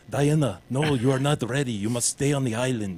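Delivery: bad, mock Russian or Romanian accent. Speaker mocks a film's dialogue in a dumb russian romanian accent. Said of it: "this dumb like Russian Romanian accent".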